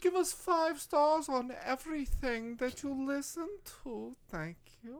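loud, high, booming, villainous put-on German accent. Show host asks listeners for ratings, doing a German villain accent. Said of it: "That's a very good German accent".

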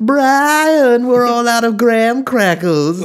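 very high-pitched put-on cartoon character voice. Describing doing voices for people who ask, showing one; cartoon voice. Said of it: "the money is when I just start doing voices for them".

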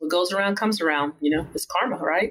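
ordinary talk

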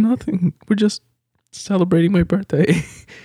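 put-on very high, shy child voice. Retelling a comedy special bit where the kid answers an adult, imitating Jim Gaffigan's shy kid voice. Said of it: "shying over".

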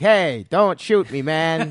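put-on Boston accent. Telling the guys about starring in a JFK remake, try out an unfinished JFK accent. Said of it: "I'm still getting the accent down, but it's going to be something like this".

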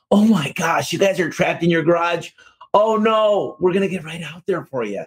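high, warm, caring put-on sympathetic voice. Showing the empathy that performance pay is judged on: put-on warm, sympathetic voice. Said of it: "literally I put on this voice".

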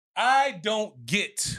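shouted outburst. Answering the question of what they don't get today: yelling. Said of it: "Are you yelling?".

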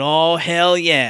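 pretend cheer, full of excitement. Retelling own fist-pumping reaction to a story moment: retelling own excited cheer. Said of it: "I pumped my fists, and I went".

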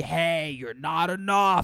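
mock screaming drill sergeant voice, berating tone. Voicing the inner drill sergeant who constantly screams: imitating a screaming drill sergeant. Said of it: "drill sergeant that's constantly screaming at me".

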